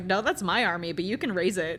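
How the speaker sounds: usual speaking voice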